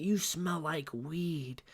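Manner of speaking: whispered, quiet. Retelling what a woman whispered to the speaker during exercises, whispering. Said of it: "That's what she whispers to me".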